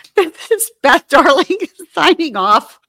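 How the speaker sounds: talking through laughter. Signing off the podcast episode: laughing while talking. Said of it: "I'm laughing too much".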